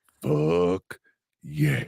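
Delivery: throatier, very deep, very low voice. Repeating a cheer after being asked to say it throatier. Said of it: "a little throatier".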